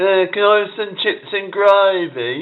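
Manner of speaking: very high Brummie accent, gravy drawn out. Showing how you'd sound if you were from Birmingham, in a Birmingham accent. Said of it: "If I was from Birmingham, I'd sound like that".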